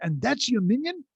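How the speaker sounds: put-on Yiddish accent. Retelling what a man said when the tenth person walked in: imitating a yiddish accent. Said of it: "he's saying with his with his Yiddish accent".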